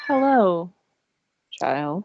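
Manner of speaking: slow-spoken turtle character voice. Describing a turtle just sitting there, the speaker acts out its greeting: slow turtle voice. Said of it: "very slowly trying to pick out what his words are".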